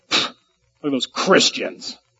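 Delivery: derisive, scornful, contemptuous sneering tone. Showing how people once said the word christians: imitating a derogatory sneer.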